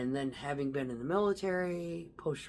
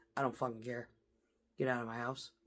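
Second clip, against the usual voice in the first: put-on cold indifference, lower and quieter; 4 semitones lower, 5 dB quieter than usual. Retelling wives who catch cheating husbands: acting indifferent. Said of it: "they're acting like".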